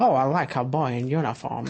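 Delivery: put-on weird New York accent. Describing the Super Mario Brothers movie, quoting Princess Peach, Princess Peach weird New York accent. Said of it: "got like a weird New York accent".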